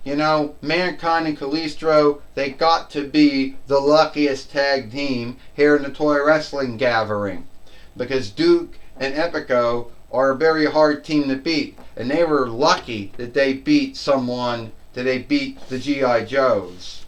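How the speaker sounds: ordinary talk, nothing marked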